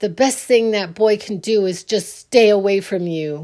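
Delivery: mock stern father voice, very stern and grave. Retelling what a father said on the phone: imitating a stern tone. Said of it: "my dad said very sternly".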